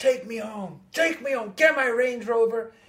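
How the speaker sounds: mock angry outburst. Retelling someone getting angry at his manager: imitating someone angry. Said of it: "he gets all angry at his manager".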